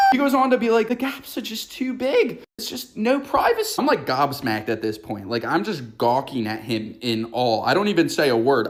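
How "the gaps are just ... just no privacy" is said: very high, thin, fake British accent. Retelling what a man covering the stall gaps told the speaker, British accent. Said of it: "In this British accent".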